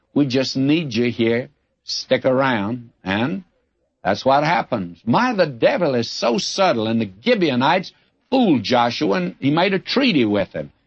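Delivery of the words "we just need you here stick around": ordinary talk, nothing marked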